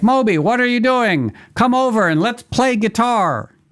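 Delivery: put-on shouty all-caps voice, very high, loud. Retelling how a man's all-caps texts read, imitating his all-caps texting voice. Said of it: "it was like him talking in your head".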